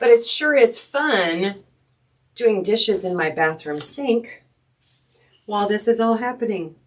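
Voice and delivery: dry, tongue-in-cheek, ironic, sarcastic, drawn-out fun. Talking about the floor being put in at home: sarcastic. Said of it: "Do you smell the sarcasm?".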